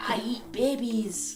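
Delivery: put-on Scottish accent. Asked for a Scottish accent, the speaker quotes a character from the Austin Powers movies. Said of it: "Every time I hear Scottish, I think of that character".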